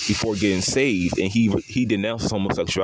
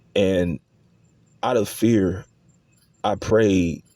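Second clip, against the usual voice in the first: ordinary talk, nothing marked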